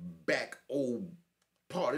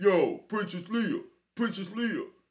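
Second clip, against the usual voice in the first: put-on big deep calling voice; 9 semitones higher, 5 dB louder than usual. Retelling how a man came up calling out a nickname: imitating someone yelling.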